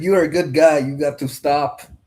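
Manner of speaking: speaking in a put-on Russian accent. Retelling what a russian guy said at a house party, imitating a russian accent. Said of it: "Only because of that accent".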